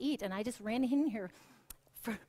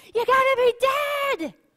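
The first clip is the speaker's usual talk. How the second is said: very high, very loud, shrill enthusiastic shout; 16 dB louder than usual. Retelling a five-year-old boy's answer in sunday school: imitating an enthusiastic yell. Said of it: "very enthusiastically yelled".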